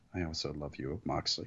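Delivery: soft, hushed, barely audible half-whisper. Retelling what they say about the other wrestler: imitating own half-whisper. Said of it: "I feel like I have to whisper".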